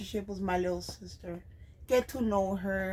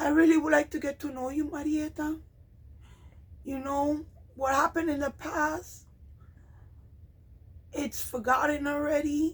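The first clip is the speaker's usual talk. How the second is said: heartfelt, full of emotion, raised pitch; 6 semitones higher than usual. Addressing their little sister, who may be watching, getting emotional. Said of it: "I'm getting emotional".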